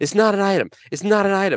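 put-on shrill, very high, insistent, repeated yelling. Retelling what an HEB attendant kept shouting at someone: retelling someone's shout. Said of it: "she keeps just shouting this".

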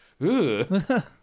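high-pitched, loud, disgusted groan.

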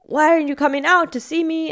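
acted, high-pitched, angry, demanding yell. Retelling what a tow truck driver yelled at the speaker, retelling the driver's yell. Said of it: "He's yelling at me".

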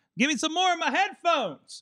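very high-pitched yelling shout. Asking the producer for more headphone volume: yelling at oneself. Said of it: "I'm yelling at myself".

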